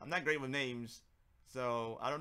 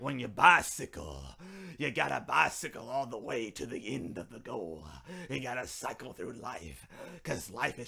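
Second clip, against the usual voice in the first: put-on raspy preacher voice, louder; 6 dB louder than usual. Imitating the pastor making his final sermon points, raspy pastor voice. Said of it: "the pastor with the raspy voice who just says things in this kind of tone".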